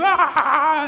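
high, laughing mock scream of alarm.

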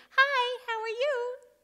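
very high, small, piping voice, drawn out. Retelling a stranger speaking from the next toilet stall: imitating a little voice. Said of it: "a little voice says".

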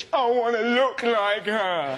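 cartoon bear character voice. Quoting a supporter, the speaker ends up sounding like Baloo. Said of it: "you sounded like Baloo from the Jungle Book".

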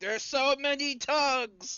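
high, slow, loud, drawn-out scream.

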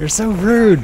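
high, loud, mock-offended sulky whine.

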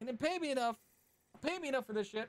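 high, fed-up voice.

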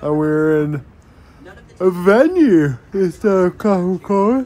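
words pushed out mid-yawn. Vlogger narrating footage of a training venue, yawning while talking. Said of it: "Sorry, I'm yawning".

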